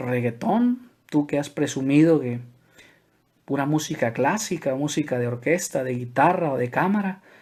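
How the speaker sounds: normal talking voice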